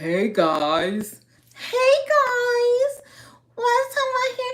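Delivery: very high, swooping, over-the-top fake hype. Retelling how a boyfriend mocked the greeting: imitating a fake-sounding internet greeting. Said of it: "You sound so fake".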